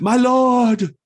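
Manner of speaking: very high, very loud cry, "lord" drawn out. Voicing a zealot woman announcing a newcomer: crying out. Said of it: "she cries out".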